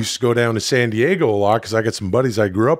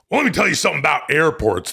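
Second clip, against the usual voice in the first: put-on gruff wrestler voice; 5 semitones higher than usual. Reading a Dudesy news story about airports in Hulk Hogan voice. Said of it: "It is where I do the Hulk Hogan".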